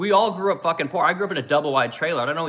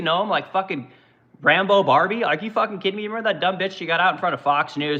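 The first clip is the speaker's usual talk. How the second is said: usual speaking voice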